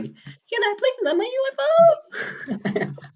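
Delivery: put-on very high, very slow, sing-song little girl voice. Describing the voice that came to mind, in a high-pitched little girl voice. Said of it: "It's just like the voice of like a primary school girl".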